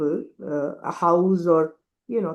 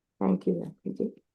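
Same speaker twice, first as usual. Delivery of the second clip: sounding disappointed; 6 dB quieter than usual. After a blunt refusal, a listener thanks the speaker, sounding disappointed. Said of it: "You sound so disappointed".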